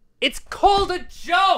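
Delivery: sudden, very high, loud yelled outburst. Asked what they said about a meme, answering back: yelling. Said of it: "Sorry, I yelled".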